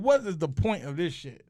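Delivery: ordinary talk, nothing marked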